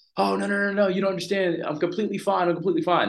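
mock yelling, very high and carrying. Retelling shouting to people across the rapids while a snake struck: retelling a yell. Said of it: "I'm yelling".

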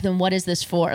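plain

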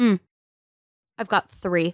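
put-on too-cool, aloof, offhand bragging tone. Retelling how an influencer interrupted to boast: imitating an aloof influencer. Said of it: "he said it like that".

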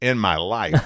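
put-on cartoon monster voice. Quoting a line after calling something dumb: Mike Wazowski voice. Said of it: "To quote Mike Wazowski".

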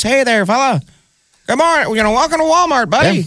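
very high, sweet, friendly greeter voice. Imitating a nice greeter welcoming a shopper: imitating a nice greeter. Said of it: "this nice person goes".

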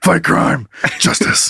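raspy, gravelly superhero-style voice. Acting out Batman answering a question on a date: Batman voice. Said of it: "With that voice".

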